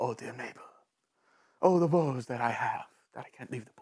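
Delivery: put-on Spanish accent, very low voice. Describing a cartoon mermaid trapped in a pool, quoting him in a Spanish accent. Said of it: "has a Spanish accent".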